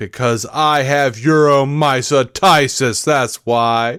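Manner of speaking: slow, poorly acted, unconvincing fake tone. Retelling a sitcom scene where Jerry excuses himself to a cop: imitating Jerry bluffing, poorly acting. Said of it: "he's full of shit and trying to, like, poorly act".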